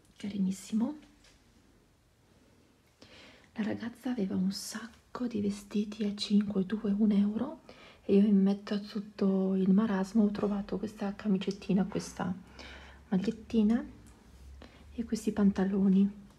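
speaking softly. Showing a Vinted parcel while the twins nap nearby: speaking softly. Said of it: "Parlo piano perché ci sono i gemellini che stanno facendo la nanna".

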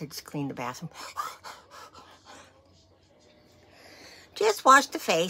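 out of breath. A host opening her video for viewers, out of breath. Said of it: "out of breath".

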